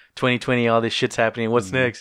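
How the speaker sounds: ordinary talk, nothing marked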